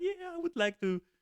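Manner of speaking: very high, tiny little squeak. Retelling how a woman spoke up on the microphone: imitating a little squeak. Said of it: "she did actually squeak a little bit".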